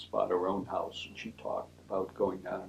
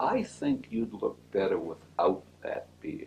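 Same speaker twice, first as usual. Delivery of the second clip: mock-kindly, very gentle, sing-song delivery. Retelling what Dean Sullivan said in the hall: imitating Dean Sullivan's gentlest voice. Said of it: "in the nicest, gentlest voice possible".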